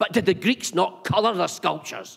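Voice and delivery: mock confrontational, pushy tone. Retelling what studio visitors ask him: imitating an aggressive question. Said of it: "in a very aggressive manner".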